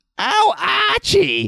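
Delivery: very high-pitched sitcom housewife voice, called out. Continuing an impression while the talk moves on: Edith Bunker impression. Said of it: "Did you just have to continue your Edith Bunker impression?".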